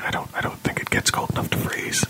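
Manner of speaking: whispered, conspiratorial and secretive. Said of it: "whispering conspiratorially".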